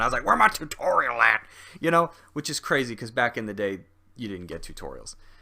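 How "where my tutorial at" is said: put-on raised, louder grumpy old-man grumble. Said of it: "I sound like an old man".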